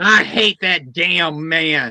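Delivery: put-on very slow, very drawn-out little old lady voice. Retelling what an old lady said in the dentist's room: imitating a little old lady. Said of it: "And the old lady goes".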